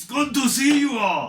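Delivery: bellowing god voice. The protection god arrives and greets everyone present: bellowing god voice. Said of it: "a bellowing voice".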